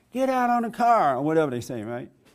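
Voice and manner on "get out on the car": loud, high-pitched screaming. Retelling a police officer with a gun on him: imitating someone screaming.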